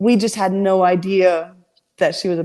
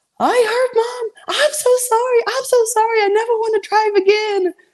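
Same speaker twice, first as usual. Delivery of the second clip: very high, bawling, sobbing through the words. Retelling a four-year-old's apology after an accident: imitating someone bawling. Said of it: "She's bawling".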